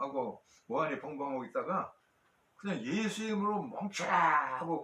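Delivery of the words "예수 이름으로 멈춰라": slow, high-pitched shouting. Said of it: "고함을 지르는".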